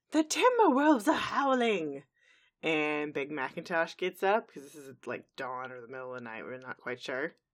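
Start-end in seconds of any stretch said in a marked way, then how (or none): 0.1-2.0 put-on high, loud old-granny voice yelling.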